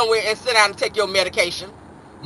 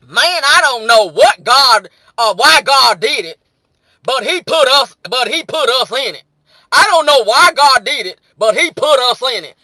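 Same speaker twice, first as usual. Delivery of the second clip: put-on rural country accent. Read out a message from the brothers in the chat, imitating their country voice. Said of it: "I'm gonna read it in their country voice".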